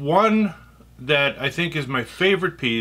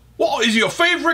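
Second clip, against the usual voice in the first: fake, bad British accent, very high-pitched; 13 semitones higher, 3 dB louder than usual. Reading out a question from someone he thinks is british, in a bad british accent. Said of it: "so I'll try to speak in a British accent".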